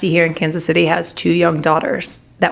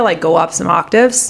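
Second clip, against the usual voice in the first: plain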